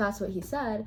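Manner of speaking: plain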